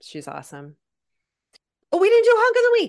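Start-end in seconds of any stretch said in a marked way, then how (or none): 1.9-2.9 shrill, booming, very loud, high sudden yell. Suddenly remembering a forgotten segment mid-conversation, yelling. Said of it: "Sorry, I just yelled".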